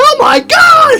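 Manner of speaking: very high, very loud, shrill schoolgirl scream. Retelling catching a parade bead: retelling screaming like a schoolgirl. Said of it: "I was screaming like a little schoolgirl".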